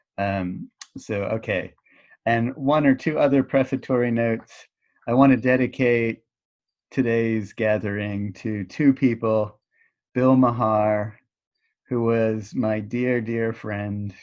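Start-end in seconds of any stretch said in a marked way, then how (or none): 5.1-14.2 voice catching, choking up. Speaker dedicating the gathering to a dear friend, choking up. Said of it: "and I'm choking up".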